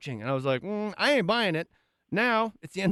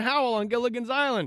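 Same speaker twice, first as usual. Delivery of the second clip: usual speaking voice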